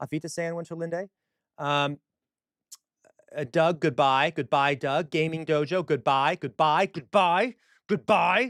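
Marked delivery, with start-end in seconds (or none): 6.4-8.5 loud, cross, angry shouted yelling. Saying goodbye to everyone at the end, angry yelling. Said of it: "I don't know why I'm getting angry, yelling".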